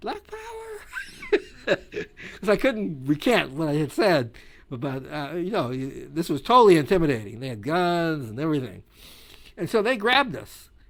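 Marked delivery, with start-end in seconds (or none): 0.0-1.8 tiny squeaky voice, very high and swooping. Retelling answering a group of big men who stopped him, in a little squeaky voice. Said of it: "in some little squeaky voice".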